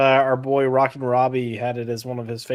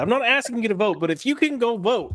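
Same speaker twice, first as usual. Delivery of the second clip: put-on derisive, mocking tone; 10 semitones higher than usual. Making fun of Rock and Robbie's request to vote: mocking imitation of Rock and Robbie. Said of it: "that is literally what he said".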